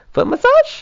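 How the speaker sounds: very high, sweet, cute little voice. Imitating the partner putting her foot out, asking: cute little high-pitched voice. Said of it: "In kind of, like, a cute little, high-pitched little way".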